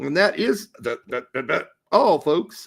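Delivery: horrible, stammering cartoon voice. Closing the show with a horrible Porky Pig impression. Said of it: "that was a horrible Porky Pig by me".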